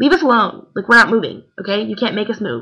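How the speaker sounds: put-on fed-up, defiant, snapping voice. Retelling finally snapping at a woman yelling: retelling snapping at someone. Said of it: "I finally just snapped and said".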